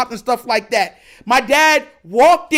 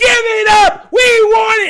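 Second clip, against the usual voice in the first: put-on high, loud old lady yell. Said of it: "an old lady started to hit him with a cane".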